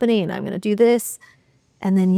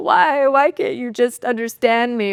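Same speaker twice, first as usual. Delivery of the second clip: mock weepy, whiny, tearful pleading tone; 4 semitones higher than usual. Retelling pleading with a partner while crying, acting out crying. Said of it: "I'm, like, crying".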